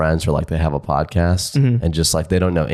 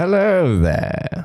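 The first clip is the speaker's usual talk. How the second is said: very high-pitched voice, full of slyness; 13 semitones higher than usual. Playing the Grinch opposite a friend playing the kid, the speaker uses a Grinch voice. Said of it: "Do you want to be the Grinch".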